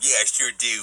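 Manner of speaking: normal talking voice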